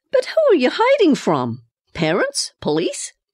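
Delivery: astonished, high, swooping, rapid string of words. A woman questions a girl who has been hiding in her house: astonished. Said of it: "in astonishment".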